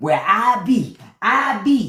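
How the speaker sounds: very slow, dumbed-down, uneducated-sounding delivery. Retelling how an official sounded on television: imitating someone sounding uneducated. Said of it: "He was sounding like".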